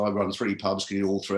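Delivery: ordinary delivery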